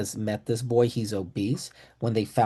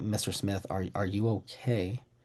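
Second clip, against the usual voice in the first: soft, hushed, under-the-breath half-whisper; 3 semitones lower, 8 dB quieter than usual. Retelling asking a man during a meeting if he's okay, half-whispering. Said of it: "I'm whispering so I don't interrupt the meeting".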